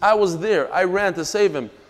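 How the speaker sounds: ordinary talk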